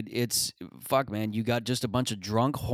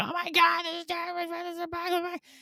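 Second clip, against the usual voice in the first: put-on, very high, screamed-out woman's voice. Telling a story about a woman who was yelling, acting out her screaming. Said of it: "She was screaming".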